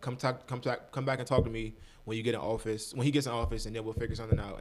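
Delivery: ordinary talk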